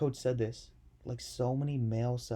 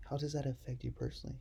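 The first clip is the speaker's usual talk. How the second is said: soft, gentle, hushed tone; 7 dB quieter than usual. Speaker demonstrates how to ask an interviewee a question: soft tone. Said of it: "talk to you like this with a soft tone".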